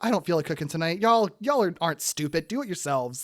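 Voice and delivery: put-on teasing, sarcastic voice. Retelling what mom would say about not cooking: imitating mom, teasing and sarcastic. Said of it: "my mom's just like".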